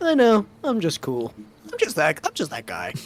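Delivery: smug, self-satisfied, cocky, swooping sing-song. Voicing a character who has just been praised: smug. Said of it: "Dunko's gonna put on smug face".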